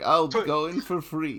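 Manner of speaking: put-on very slow, dragged-out, dumb-sounding silly Russian accent. Voicing Stroganoff offering to go in for free: Stroganoff voice, dumb Russian accent. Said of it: "if I'm doing a dumb Russian accent, then it's Stroganoff".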